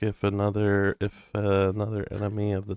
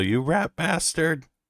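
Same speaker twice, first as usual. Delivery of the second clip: high, shouted in-character yell; 8 semitones higher than usual. Attacking an enemy in a tabletop game, yelling in character. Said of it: "And I'm gonna yell".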